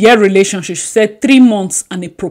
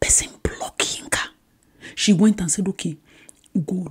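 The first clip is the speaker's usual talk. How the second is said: whispered speech, quieter; 10 dB quieter than usual. Telling viewers a shameful story about Yinka, whispering. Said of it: "I need to whisper".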